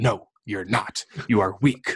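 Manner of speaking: put-on gruff, rough, harsh voice. Retelling how a man cut them off mid-sentence, in a gruff, harsh voice. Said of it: "like real gruff voice, kind of harsh".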